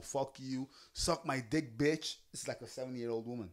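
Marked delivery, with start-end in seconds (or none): 0.0-2.2 quieter, angry cursing. Retelling how a young man cussed out an older couple: imitating someone cussing people out. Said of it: "he's cussing them out".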